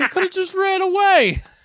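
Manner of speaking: mock crying, teary tone. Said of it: "I remember crying to my mother".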